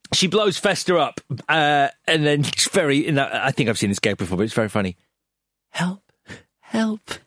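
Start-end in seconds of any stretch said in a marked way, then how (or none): 5.7-7.0 very quiet, hushed, much higher pitch. Retelling a movie scene after a character gets blown up, very quiet. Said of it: "Saying it very quietly".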